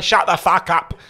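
put-on Estuary English accent. Imitating his sister reacting to his posh voice, in estuary english. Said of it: "like kind of estuary English".

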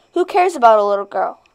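ordinary delivery

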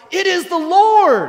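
very high, very loud, joyful shout, "Lord" drawn out. Speaker retelling John turning to Peter, retelling an excited shout. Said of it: "and shouts".

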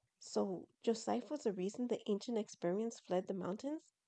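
plain reading voice

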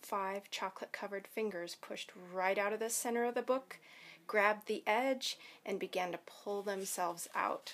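ordinary delivery

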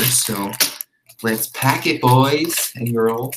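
put-on camp, flamboyant voice.

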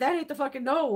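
ordinary talk, nothing marked

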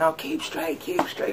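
yelling delivered as a whisper. The speaker retells a man yelling at someone during a parade: retold yelling. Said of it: "He yelling at him, going".

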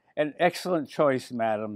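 ordinary delivery, nothing marked

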